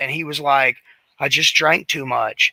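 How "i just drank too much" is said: put-on voice near tears. Retelling a teammate's answer after being yelled at: imitating someone near tears. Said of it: "almost in tears".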